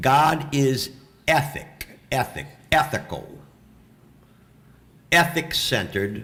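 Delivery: very slow, deliberate, word by word delivery. A speaker slows down so the audience can understand, speaking slowly. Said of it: "I got to say this slow".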